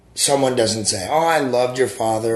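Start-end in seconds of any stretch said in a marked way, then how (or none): none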